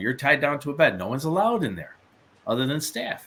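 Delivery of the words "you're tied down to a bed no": usual speaking voice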